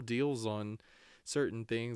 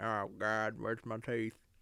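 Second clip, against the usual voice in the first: put-on old-timer voice with no teeth. Joking about how the way they said it sounded, toothless old person voice. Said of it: "it sounded like I had no teeth".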